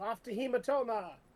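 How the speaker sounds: loud, high, boastful, proud yell. Narrating as the character marches off in front of the players: Nornock's proud yell. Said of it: "marches off in front of you very proudly and yells".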